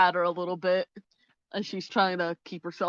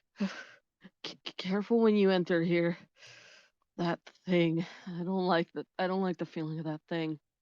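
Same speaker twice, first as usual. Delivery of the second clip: trembling, shaky half-whisper with a stammered start; 4 dB quieter than usual. Voicing Firefly warning the others in a half-whisper: slightly shaky half-whispering voice. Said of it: "a little bit of a shake in her voice".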